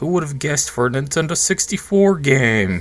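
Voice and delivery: dry, sarcastic delivery.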